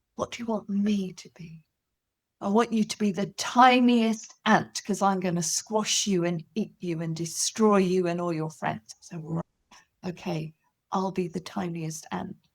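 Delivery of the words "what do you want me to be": little stage whisper, much quieter. Acting out a pretend game about being the lion, in a little stage whisper. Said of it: "I might whisper, like a little stage whisper".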